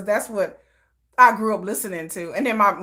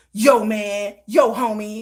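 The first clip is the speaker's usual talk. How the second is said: very slow, tough street-style talk with attitude. Recalling being a little tough girl in a gang: imitating her younger tough self. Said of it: "That was me".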